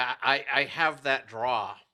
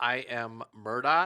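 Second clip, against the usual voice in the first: slow, drawn-out delivery. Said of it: "You said it kinda slow there".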